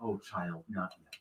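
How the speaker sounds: tender, soft, gentle feminine voice, close-up. Voicing a voice in a dead character's ear: gentle feminine voice. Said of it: "this gentle feminine voice in your ear saying".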